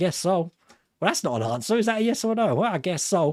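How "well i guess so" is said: teasing, mocking, put-on American accent. Speaker mocking how americans answer, in a mocking american accent. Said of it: "I'm mocking".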